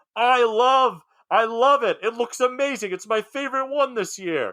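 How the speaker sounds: very high, drawn-out hollering yell. Retelling a neighbor across the street calling out: imitating a neighbor yelling. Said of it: "she yells out".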